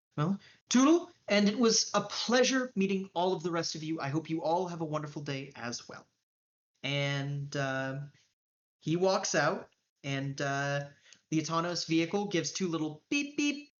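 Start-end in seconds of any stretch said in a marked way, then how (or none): none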